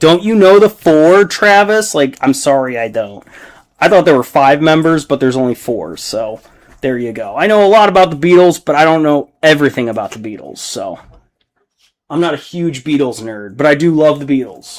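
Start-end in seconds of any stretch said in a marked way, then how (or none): 0.0-1.9 shrill, high, raised screaming. Imagining a viewer screaming at the computer: imitating someone screaming. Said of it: "someone would be screaming at the computer".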